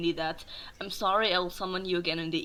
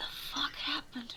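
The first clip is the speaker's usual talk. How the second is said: barely voiced, hushed whisper under the breath; 8 semitones higher, 8 dB quieter than usual. Asking the others what happened: whispering under one's breath. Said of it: "I just whisper under my breath".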